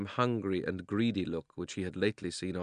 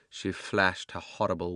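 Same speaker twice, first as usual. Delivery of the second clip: plain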